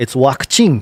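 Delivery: imitated Japanese accent. Demonstrating how a word sounds when said in a japanese accent. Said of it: "the Japanese, uh, I don't know, accent for saying the word vaccine".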